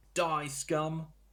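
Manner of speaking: shrill, loud goblin yell. A game master voices a goblin answering the party's challenge, goblin yelling back. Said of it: "And he yells back".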